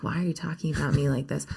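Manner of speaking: normal talking voice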